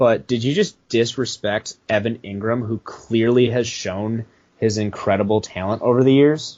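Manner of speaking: ordinary talk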